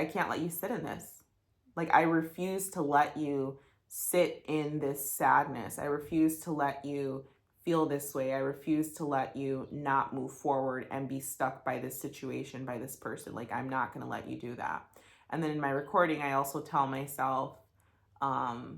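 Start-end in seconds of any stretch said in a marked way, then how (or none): none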